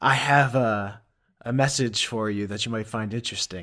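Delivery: low, would-be cool voice. Voicing Ailey as she tells someone she has a message, in Ailey's low would-be cool voice. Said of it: "Ailey will lower her voice in what she thinks is a cool way".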